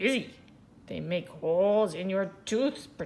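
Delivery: ordinary delivery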